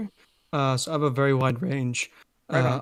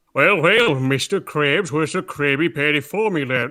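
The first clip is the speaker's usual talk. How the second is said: loud, put-on cartoon character voice; 6 dB louder than usual. Asked for a favorite cartoon voice, the speaker does a Plankton voice.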